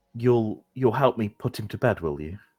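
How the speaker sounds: slightly scared, high-pitched woman's voice. Narrating a scene, voicing a woman speaking to three guests, a bit frightened. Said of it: "She looks a bit frightened".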